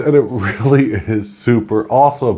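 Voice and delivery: chuckling, laughing through the words. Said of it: "if you don't know why I'm laughing".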